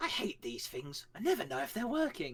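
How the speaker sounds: put-on elderly woman voice with swooping pitch. Describing an old woman on the com, quoting her in an old woman voice. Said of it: "as like this old woman like appears".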